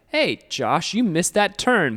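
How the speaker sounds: pointedly passive-aggressive voice. Demonstrating how somebody might talk to Josh, in a passive-aggressive voice. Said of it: "a passive aggressive voice".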